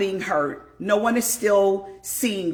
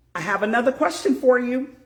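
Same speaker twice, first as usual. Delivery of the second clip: normal talking voice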